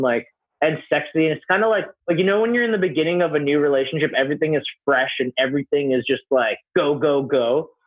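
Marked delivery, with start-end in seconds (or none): none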